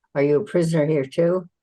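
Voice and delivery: very concerned, earnest voice. Retelling what a lady they ran into said to them, mock very concerned voice. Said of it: "she said to me in a very concerned voice".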